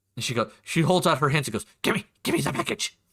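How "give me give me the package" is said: rough, creaky goblin woman voice. Voicing a goblin woman who takes a package at her door: goblin woman voice. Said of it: "you see a goblin woman".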